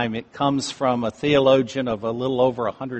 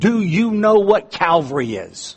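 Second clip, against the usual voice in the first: mock forceful, demanding tone with swooping pitch; 6 semitones higher, 3 dB louder than usual. Retelling how the man instructing the students addressed them, in a strong voice. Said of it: "he said with a strong voice".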